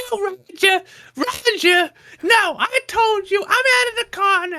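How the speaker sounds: acted, very high, furious, drawn-out angry yelling. Retelling a stranger's angry phone call: imitating a woman screaming on the phone. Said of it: "she's fucking screaming at someone on the phone".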